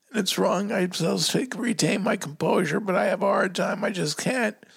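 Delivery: high, choked-up crying, words forced out through tears.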